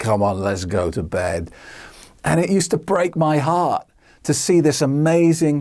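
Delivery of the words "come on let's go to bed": put-on slurred speech, much lower. Acting out a woman draping herself on you, imitating slurred words. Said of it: "slurring her words and say".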